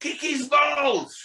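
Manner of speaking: play-acted very high, shrill shouted woman's call. Retelling a woman shouting from an upstairs window: imitating a woman shouting. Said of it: "and she shouts".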